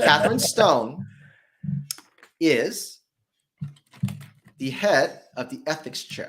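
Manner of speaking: carefully spaced, slow, deliberate, word by word. Introducing the person in the video, the speaker is speaking slowly. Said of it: "I'm going to say this slowly".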